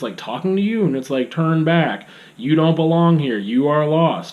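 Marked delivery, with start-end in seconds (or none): 1.3-4.3 stock sci-fi machine speech. Describing a game voice that talks to the player: stereotypical robot voice. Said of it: "this really stereotypical robot voice".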